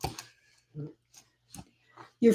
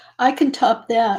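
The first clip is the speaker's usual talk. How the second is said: plain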